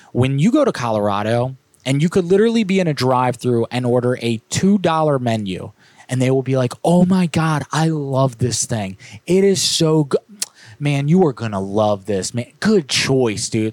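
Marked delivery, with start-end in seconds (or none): 6.8-13.7 mock gushing, over-the-top enthusiasm, swooping pitch. Retelling how Colorado drive-through workers react to an order: imitating an overly enthusiastic server. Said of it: "every single person you encounter is a motivational speaker".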